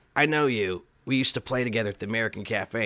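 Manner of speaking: ordinary talk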